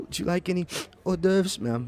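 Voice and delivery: tearful whimper. Game narrator, as a young waitress approaching a guest, crying and whimpering. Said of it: "It sounds like you're crying, whimpering".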